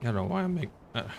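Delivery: soft voice breaking mid-phrase. Planning to stick close to the doggo, the speaker's voice cracks. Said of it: "voice crack".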